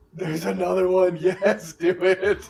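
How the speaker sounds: loud, excited, laughing cheer.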